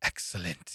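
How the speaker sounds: very quiet, breathy, breathed-out whisper. Imitating a man who is doing the Mister Burns: Mister Burns voice. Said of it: "he's doing the Mister Burns".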